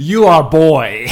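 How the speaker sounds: very loud, high, bad fake Swedish accent. Voicing two Bachelor hosts with a masculinity podcast, bad Swedish accent. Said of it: "That is not a Swedish accent at all".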